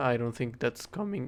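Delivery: cracking voice, breaking mid-word. Talking to viewers about Mojang's fixes, voice cracking. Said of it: "voice crack".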